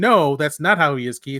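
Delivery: normal talking voice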